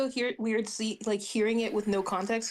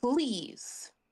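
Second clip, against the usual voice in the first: pointed, threatening, menacing delivery; 3 semitones higher than usual. Voicing a character squinting at a warhammer: threatening "please". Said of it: "full on leans in".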